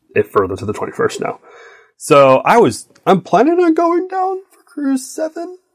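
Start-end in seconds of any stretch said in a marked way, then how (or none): 1.9-5.5 much higher pitch, much slower. Speaker sharing plans with the other speaker, in a high-pitched voice. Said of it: "I said it with a high-pitched voice".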